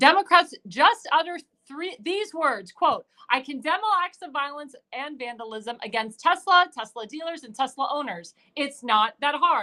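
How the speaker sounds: ordinary delivery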